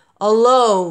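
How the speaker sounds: slow, drawn-out, rumbling lion voice. A lion repeats the word back to his listener, in a rumbling lion voice. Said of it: "repeated in his rumbling voice".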